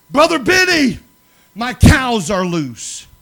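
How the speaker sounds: shrill, full-volume yelling. Speaker retells a woman phoning at 3 a.m., imitating someone yelling. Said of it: "she starts yelling".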